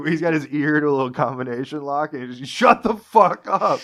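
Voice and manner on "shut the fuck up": loud, drawn-out, fed-up, annoyed angry bellow. Describing a man, the speaker acts out his mock yelling at boat tours. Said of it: "He's just yelling at boat tours".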